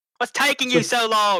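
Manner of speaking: put-on screaming. Playing a character who turns and calls to the slow group: screaming in character. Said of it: "and she just screams".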